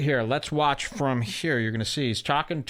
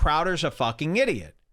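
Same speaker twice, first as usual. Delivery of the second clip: put-on half-hearted yelling in a child voice; 3 semitones higher than usual. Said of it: "one kid yells out".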